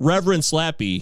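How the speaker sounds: ordinary talk, nothing marked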